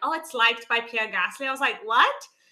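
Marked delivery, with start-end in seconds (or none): none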